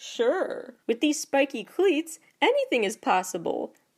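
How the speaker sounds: cheery, naive, high, sunny, swooping cartoon voice. Retelling a cartoon scene, SpongeBob answers a request for a boost: imitating his cheery naive tone. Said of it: "says in his usual cheery, naive tone".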